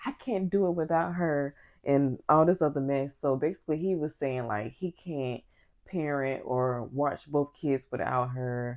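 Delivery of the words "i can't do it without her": restrained, mild, held-back half-yell. Retelling an argument between two people: imitating Michael yelling. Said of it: "Michael basically yells to Amy".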